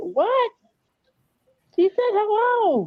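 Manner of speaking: play-acted stunned surprise, very high and very slow. Retelling another speaker's reaction to a greeting: imitating someone surprised. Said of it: "you were just so surprised".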